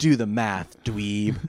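loud, mocking game narrator voice.

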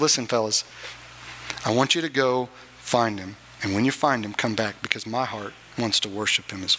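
very low, secretive, hushed voice. Retelling how a king calls some men over, speaking quietly. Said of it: "he calls them quietly and says".

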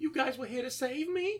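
put-on, very high, choked-up voice. Quoting a movie character who is being rescued, imitating a choked-up character. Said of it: "she's so, so, like, choked up".

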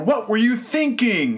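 play-acted, very high, scolding parent's yell. Retelling what gets said to the kids when frustrated: imitating own yelling at kids. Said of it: "it's yelling like".

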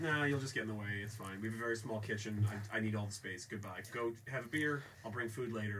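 ordinary delivery

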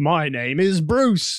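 Australian accent, twang laid on stronger. Quoting a line from the movie again, with more of an Aussie accent. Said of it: "with more of an Aussie accent".

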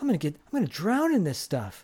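put-on mumbling. Retelling a movie scene, a character as his truck fills up: retelling a mumble to himself. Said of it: "Jason like mumbles to himself".

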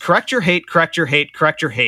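ordinary delivery

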